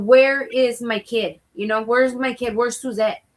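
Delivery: mock-angry, put-on angry delivery. Retelling asking the office attendant where her kid is: retelling an angry demand. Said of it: "I'm like pissed".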